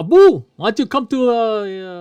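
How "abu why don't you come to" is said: put-on Spanish accent, pitched up. Retelling a story about a friend named Abu, doing a put-on Spanish voice. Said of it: "This is your Spanish voice".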